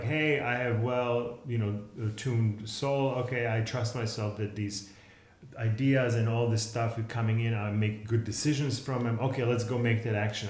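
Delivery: normal talking voice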